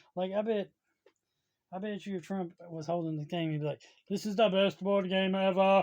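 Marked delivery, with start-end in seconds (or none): 4.0-5.8 very loud, booming put-on voice. Imagining Trump praising a board game, it comes out Arnold Schwarzenegger-like voice. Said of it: "I don't know why I'm sounding like Arnold Schwarzenegger when I'm trying to say that".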